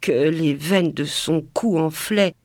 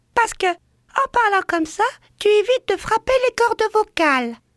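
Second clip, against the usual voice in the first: tiny birdlike voice, very high pitched. Repeating what her teacher used to tell her, small bird-like voice. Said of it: "Elle prenait cette petite voix d'oiseau".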